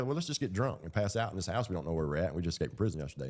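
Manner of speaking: usual speaking voice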